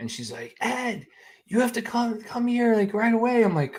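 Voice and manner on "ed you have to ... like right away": very high, shrill, screaming voice. Retelling how his wife screamed for him to come: imitating wife screaming. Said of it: "I hear my wife, like, scream".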